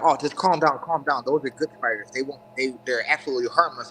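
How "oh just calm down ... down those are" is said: plain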